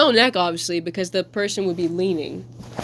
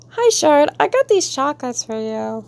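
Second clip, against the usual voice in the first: higher, awkward sitcom-style character voice; 7 semitones higher than usual. Giving a character an awkward voice, like one heard on a TV show. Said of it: "I give her the awkward voice you would hear in a regular show".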